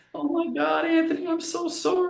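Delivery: very high, bawling, sobbing scream through tears. Retelling what a kid said on reaching the speaker, imitating him screaming and crying. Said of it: "he's screaming and he falls to his knees".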